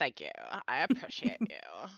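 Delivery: put-on talking like a valley girl. Thanking another speaker for a timer: valley girl voice. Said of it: "Somebody redeemed her Talk Like a Valley Girl".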